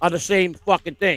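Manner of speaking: ordinary delivery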